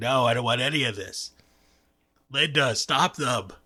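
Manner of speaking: put-on voice sounding like a sick man. Speaker acts out Bob refusing the hired burger-pun writers, doing a Bob impression. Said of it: "Your impression sounds more like a sick Coach McGurk".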